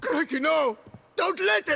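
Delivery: loud, high-pitched panicked screaming.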